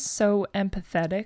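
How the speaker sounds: plain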